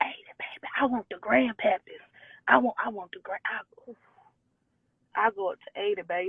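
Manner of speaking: hushed, under-the-breath whisper, kept low. Answering an interviewer about the age range she would date, whispering. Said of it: "Why you whispering, girl?".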